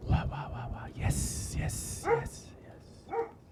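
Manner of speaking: very slow, very quiet whispering tree voice. Voicing a giant tree answering the adventurers: whispering tree voice. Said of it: "he's whispering, guys".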